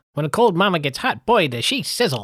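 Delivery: put-on loud, rapid, quick old-timey movie announcer patter. Discussing old movies, doing the old-timey, quick announcer voice. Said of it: "I purposely asked [name] to do it in that accent ... that stereotypical old-timey, quick, you know, announcer voice".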